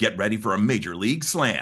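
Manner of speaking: lively, energetic ballpark sports promo announcer voice. Voice actor demonstrating a promo read, energetic Major League Baseball promo. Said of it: "it has a little bit of energy to it".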